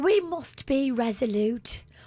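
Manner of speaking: royal British queen delivery, high-pitched. Asked to let the others hear a British Queen voice; British Queen impression. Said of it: "Let me hear your British Queen".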